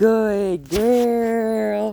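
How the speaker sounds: high praising voice. Praising the dog for sitting during training, in a reward voice. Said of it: "There's that reward voice".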